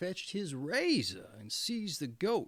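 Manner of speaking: ordinary delivery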